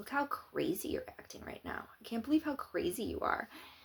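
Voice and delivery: mock whispered, condescending false calm. Describing people who needle you, then retelling their reply: mock-calm. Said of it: "they'll get real calm and go".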